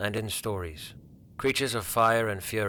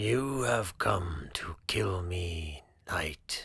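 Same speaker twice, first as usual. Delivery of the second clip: low, rumbling, slow dragon voice; 2 semitones lower, 4 dB quieter than usual. Reading a story, as the dragon Tharagon speaking to the knight, low and rumbling. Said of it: "I am the last of my kind, / The dragon was enormous, easily twice the size of any creature Cedric had faced in his long career. His wings, once vast and powerful, were now folded tightly against his b".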